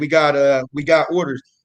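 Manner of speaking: usual speaking voice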